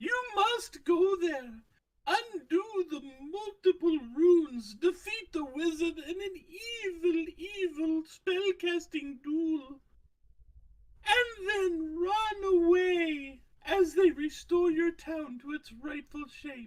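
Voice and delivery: put-on extremely obnoxious talking owl voice. Telling a story, voicing a talking owl: most obnoxious voice possible. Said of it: "spoke in the most obnoxious voice possible".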